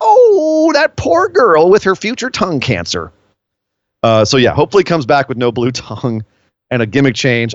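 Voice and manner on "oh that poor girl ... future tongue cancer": very high, drawn-out, swooping voice. Speaker voices the mom voice in their head, in a mom voice. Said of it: "The mom voice in my head is like".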